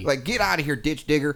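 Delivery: screamed exaggerated Southern accent. Recalling an insult they used to yell at someone, in a screamed stereotypical Southern accent. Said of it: "scream it at someone in an incredibly stereotypical Southern accent".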